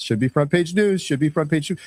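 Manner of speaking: usual speaking voice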